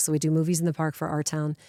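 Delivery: ordinary delivery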